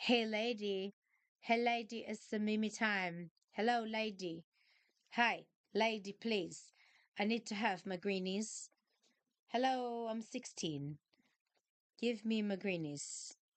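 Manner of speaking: slow, drawn-out, demanding cat voice. Retelling how the cat claws her for treats: voicing her cat Starburst. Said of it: "She's clawing me 'cause she's like".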